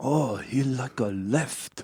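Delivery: very slow, put-on Japanese accent. Acting out a foreign spy reading turning data: imitating a Japanese accent. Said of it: "that was a really, really good Japanese accent".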